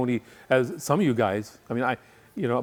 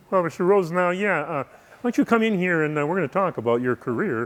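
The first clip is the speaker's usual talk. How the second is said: put-on cartoon frog voice; 4 semitones higher than usual. Retelling a career talk, voicing the man named Kermit in a Kermit the Frog voice. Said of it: "he sounded like Kermit the Frog".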